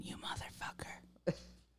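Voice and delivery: very quiet, breathy, barely voiced whisper. Retelling what another speaker just whispered: imitating someone whispering. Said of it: "I hear you whispering".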